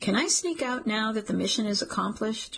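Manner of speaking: ordinary delivery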